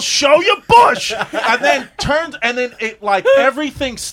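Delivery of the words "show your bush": shrill, very high, loud shouted yell. Recounting a man in the back breaking the silence, retelling a yell. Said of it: "He yells".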